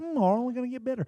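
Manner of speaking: very high-pitched cartoon frog character voice. Retelling what a coach said to his fighters, in a Kermit the Frog voice. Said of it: "He was like Kermit the Frog".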